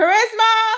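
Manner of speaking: loud, high-pitched calling yell. Calling a daughter to bring something down during the live: yelling a name. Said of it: "I'm gonna yell her name right now".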